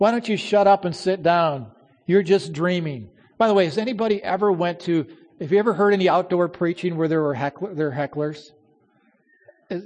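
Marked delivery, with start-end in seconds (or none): none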